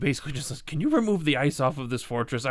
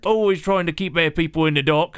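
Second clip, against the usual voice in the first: put-on loud, heavy, thick, laid-on British accent; 3 semitones higher, 5 dB louder than usual. Running a script line while practicing accents, thick british accent. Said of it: "Thick British accent".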